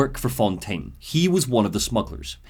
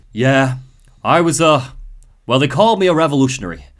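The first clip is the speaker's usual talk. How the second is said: put-on defeated Irish voice, louder; 5 dB louder than usual. Quoting the helpful Irish friend explaining his past: defeated Atlas voice. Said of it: "he sounds a bit defeated when he says it".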